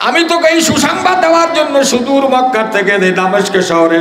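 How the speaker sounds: exuberant, excited.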